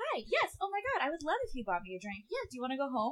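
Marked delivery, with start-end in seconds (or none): 0.0-2.2 bright, high, put-on polite customer-service voice. Showing the voice not used with familiar people; high 'up here' voice. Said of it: "I'm not going to, like, be like".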